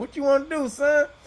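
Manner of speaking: very high-pitched, tough, challenging street voice.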